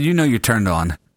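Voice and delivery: ordinary talk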